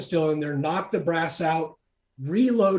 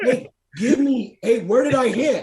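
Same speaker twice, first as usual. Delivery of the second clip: acted, raised, high-pitched calling shout; 8 semitones higher, 6 dB louder than usual. Recounting asking the spotter for a correction, retelling a shout. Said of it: "I'm shouting to the guy".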